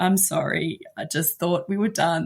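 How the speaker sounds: put-on calm tone. Mother retells apologizing to her son over his banana: retelling a calm apology.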